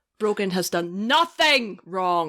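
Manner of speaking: deadpan delivery with one word hammered hard. Suggesting how to read a title line: Penn Jillette way of talking. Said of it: "the Penn Jillette way of talking, which is you emphasize one word".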